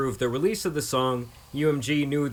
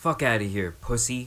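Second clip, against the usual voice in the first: grumbled, dismissive jab. Retelling an insult said after a game: imitating muttering under breath. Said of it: "muttering under his breath".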